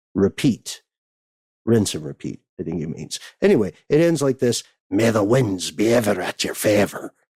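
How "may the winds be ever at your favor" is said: put-on pirate brogue, slower. Quoting how it ends, in a pirate voice. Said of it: "a pirate is, voice a brogue".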